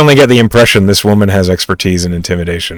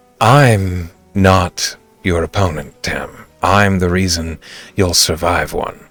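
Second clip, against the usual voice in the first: calm, silky, cool, lowered voice; 6 dB quieter than usual. Voicing a character's counter to Tam, in a smooth and cool voice. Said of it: "with a smooth and cool voice on her counter".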